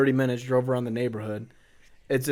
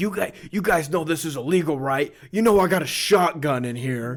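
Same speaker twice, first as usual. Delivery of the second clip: mock, scolding, yelling telling-off delivery; 3 semitones higher than usual. Retelling being caught doorbell ditching by a dude: imitating someone yelling. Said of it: "he started yelling at us".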